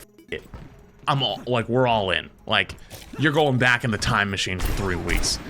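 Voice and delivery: ordinary talk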